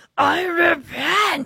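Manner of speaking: booming, loud preaching voice, pitched way up. Retelling how Wool declared to everyone after the ride: retelling a loud preaching voice. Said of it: "in his loudest preaching voice".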